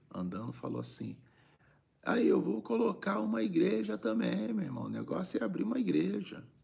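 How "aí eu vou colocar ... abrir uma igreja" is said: very high, teasing, mocking, jeering tone. Retelling a passer-by joking about opening a church: imitating a mocking man. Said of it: "um cara pra debochar".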